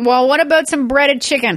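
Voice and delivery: insistent nagging tone. Retelling how she coaxes the speaker to eat meat, in a mock-pushy imitation of her. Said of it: "She doesn't sound like this at all".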